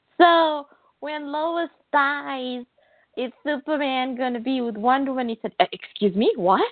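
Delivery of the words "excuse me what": put-on Scottish accent. Retelling how a man answered a fan's question about Superman: Scottish accent. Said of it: "In a Scottish accent".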